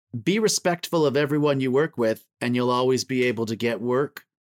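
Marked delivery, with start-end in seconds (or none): none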